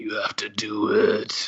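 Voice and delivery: slow, threatening villain whisper.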